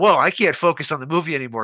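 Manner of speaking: normal talking voice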